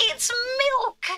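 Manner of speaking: very high, game-character style voice. Exclaiming in disbelief to another speaker, sounding like Mario. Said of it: "sounded like Mario saying it".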